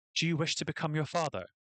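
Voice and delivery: irritated, annoyed, pissed-off angry tone. Voicing a deity mother who questions her child: pissed tone. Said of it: "in a pissed tone".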